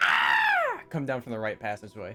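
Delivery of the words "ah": horror-movie scream. Creating a minor illusion down a passageway: stereotypical female horror scream. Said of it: "like your stereotypical, like, female horror scream".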